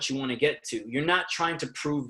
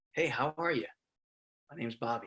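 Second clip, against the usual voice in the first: low, soft, calm late-night radio DJ voice; 8 dB quieter than usual. Showing how to voice the late-night DJ in a scene, low late-night DJ voice. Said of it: "that's a late night type of low D J voice".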